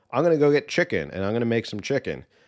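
ordinary delivery

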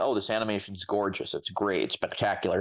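ordinary talk

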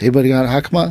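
put-on quiet, hushed voice. Retelling how students asked around for a spare hakama: imitating quietly asking around. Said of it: "you would quietly go around".

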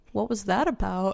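very soft, quiet, mild, barely-there voice. Retelling what the quiet trainer asked, imitating a quiet voice. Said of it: "so, like, quiet".

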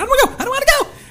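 put-on screaming meltdown, very high, loud, shrill. Telling how he freaked out on the way there: acting out freaking out. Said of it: "He starts freaking out".

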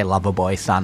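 ordinary talk, nothing marked

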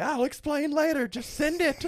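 play-acted, urgent, frantic panicked insistence, very high pitch. Speaker retelling what his grandma told his dad, imitating frantic insistence. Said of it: "acting all frantic and everything".

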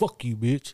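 furious, angry talking dog voice. Voicing every dog freaking out at another dog: talking as an angry dog. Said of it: "every dog is like".

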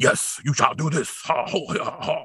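badly dubbed martial-arts movie voice. Describing a cartoon's voice work, demonstrating it in kung fu theater dubbing style. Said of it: "a very kung fu theater kind of dubbing style".

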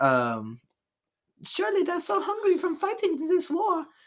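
put-on very high, swooping, terrible French accent. Retelling French women greeting American soldiers, in a terrible French accent. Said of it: "it's a terrible French accent".

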